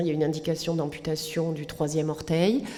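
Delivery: ordinary delivery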